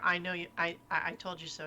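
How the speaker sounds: ordinary talk, nothing marked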